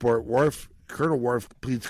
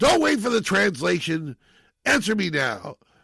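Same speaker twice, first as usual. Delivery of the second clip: unhinged, out-of-control shouting, pitched up; 8 semitones higher, 3 dB louder than usual. Retelling a courtroom scene where one character questions another: imitating a character yelling. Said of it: "then he starts yelling at him".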